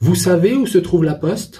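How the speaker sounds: voice climbs at the end on poste. Teaching three ways to form a french question: rising intonation on poste. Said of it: "on a juste la voix qui monte".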